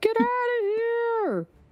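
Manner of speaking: frog creature yelling. Narrating a game scene, voicing bullywugs on the shore, bullywugs shouting. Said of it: "shouting at the Miros to leave".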